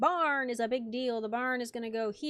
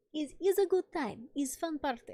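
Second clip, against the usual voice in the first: bad, fake put-on Russian accent; 4 semitones higher than usual. Doing a bit for the others in a bad Russian accent. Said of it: "It's a bad Russian accent".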